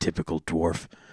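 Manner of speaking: put-on muttering. Game master voicing Gundren at the Sleeping Giant Tap House, mumbling under breath. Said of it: "sort of mumble under his breath".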